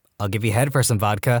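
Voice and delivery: ordinary delivery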